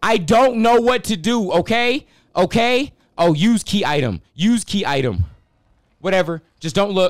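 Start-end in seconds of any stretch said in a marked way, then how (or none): 0.0-2.9 panicked, higher and louder. Playing a game and unsure what to do: panicking. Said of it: "I'm panicking".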